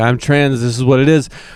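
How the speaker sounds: plain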